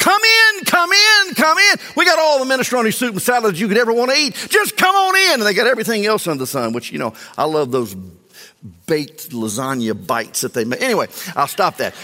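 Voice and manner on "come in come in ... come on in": very high, shrill, loud pleading and begging. Voicing restaurant advertising that invites people in: imitating begging ads. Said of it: "just begging people".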